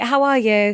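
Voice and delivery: put-on Essex accent. Showing how people there talk: Essex accent. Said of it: "So they would talk like this".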